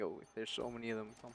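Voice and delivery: normal talking voice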